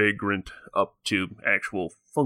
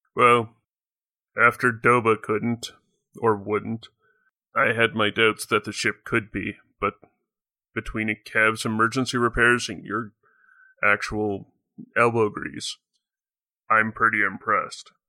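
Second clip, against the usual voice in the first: alien character voice. At a game table, the alien passenger answers the one who fixed the ship: Rodian passenger voice. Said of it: "out of an open hatch comes down a large, somewhat burly Rodian. / out of an open hatch comes down a large, somewhat burly Rodian. / as they're jogging down the ramp and turning to you".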